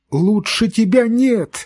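very high, desperate, tearful cry of despair. Reading a novel aloud, a boy clutches his mother's shoulders: shouting in despair through tears. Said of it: "с отчаянием закричал он сквозь слезы".

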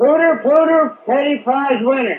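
shrill, very high, loud yell. Answering a caller who asks for the code phrase yelled out: yelling loudly. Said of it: "you gotta do it real loud so they hear ya".

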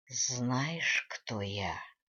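hissed, no longer human. Narrator reads an attacker gripping the duke's throat, in a hissing inhuman voice. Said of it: "прошипел".

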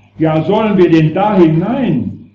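put-on high, loud, stammering panicked shout like a helpless child.

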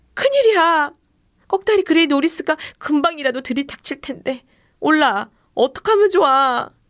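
high-pitched, panicked, terrified shout. Brandon cries out to Ola, shouting in terror. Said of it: "브랜든이 공포에 질려 소리쳤어요".

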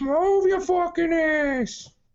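put-on thick New York accent, very high and shrill. Imagining how people in New York traffic would react: heavy New York accent. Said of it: "heavy accent and everything".

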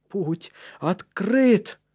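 excited, thrilled, eager, trembling, shaky voice. Caleb, having torn the grating loose, tells Matthias in an excited, trembling voice. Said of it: "произнес Калеб взволнованным, дрожащим голосом".

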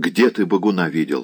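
plain

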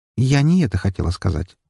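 plain reading voice

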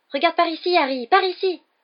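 small, very high, very loud, shrill voice. Narrator reading Colin calling out to Harry from the stands, Colin's small high-pitched voice. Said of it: "d'une petite voix aiguë".

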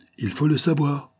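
high, impatient outcry. Impatient voices press the president for an answer, crying out impatiently. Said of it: "s'écrièrent des voix impatientes".

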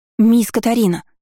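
scared, startled, high frightened voice. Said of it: "раздался надо мной испуганный голос Беатрис".

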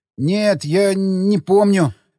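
trembling, shaky, quavering voice. Reading a story, Borshchev answers Samokhin's questioning in a trembling voice. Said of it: "дрожащим голосом проговорил".

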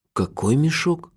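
soft, high-pitched, amazed and incredulous. The narrator asks Juffin to clarify his remark: astonished question. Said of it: "изумленно переспросил я".

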